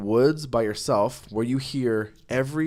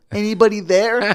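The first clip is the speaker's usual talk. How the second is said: put-on innocent, nice girlish voice, higher and louder; 10 semitones higher, 8 dB louder than usual. Retelling a girl calling on a walkie-talkie: imitating Alicia's innocent, nice voice. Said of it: "her voice of that radio was innocent and nice".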